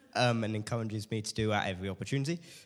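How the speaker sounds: speaking really quickly, fast and rushed. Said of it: "and I'm speaking really quickly".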